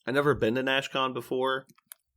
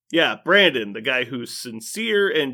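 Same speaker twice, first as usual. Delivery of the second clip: high, loud, heavily sarcastic tone. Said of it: "trying to be as sarcastic as possible".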